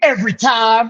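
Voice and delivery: put-on old-school Southern wrestling heel voice, boastful and heated. Retelling a wrestler's promo answers to interview questions: Jeff Jarrett impression. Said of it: "going old school Southern wrestling heat".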